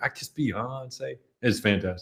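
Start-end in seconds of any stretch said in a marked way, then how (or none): 0.0-1.2 put-on sounds like a six-year-old child. Describing the Kid President videos, quoting what he says: Kid President impression. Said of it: "He's like".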